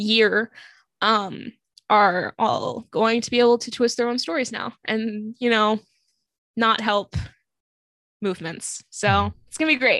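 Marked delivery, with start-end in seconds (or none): 8.9-10.0 dry, sarcastic tone meaning the opposite. Complaining about police departments dropping body cameras: sarcastic.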